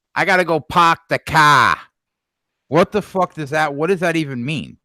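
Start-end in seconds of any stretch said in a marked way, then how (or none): 0.2-1.8 slow mock Boston accent with dropped r's. Complaining about dropped r's, saying park the car in a mock boston accent. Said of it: "I don't understand why they don't pronounce R's".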